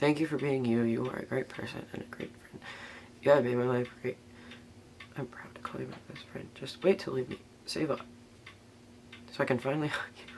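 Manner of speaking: crying in a near whisper, tearful, hushed, breathy. Reading a heartfelt card to a best friend: crying while talking. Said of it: "I'm crying again".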